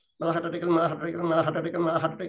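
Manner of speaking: very fast, gibberish-like. Repeating one sentence over and over: rapid repetition like gibberish. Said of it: "आता ते वाक्य भराभर आणखी वेगानं".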